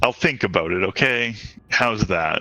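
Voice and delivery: placating, appeasing tone. Agreeing to keep moving and think about it later: placating tone. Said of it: "Don't say it like you're trying to placate me".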